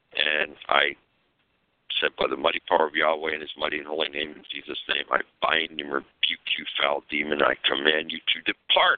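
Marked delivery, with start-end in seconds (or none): none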